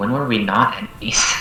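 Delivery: muttering under breath. A character speaks not even to him, just kind of mumbling. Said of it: "just kind of mumbling".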